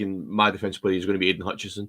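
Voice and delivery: ordinary talk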